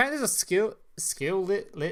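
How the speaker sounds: stumbling, lisping speech. Announcing a new skill after biting the tongue yesterday: struggling to speak. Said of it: "this is hard to fucking speak".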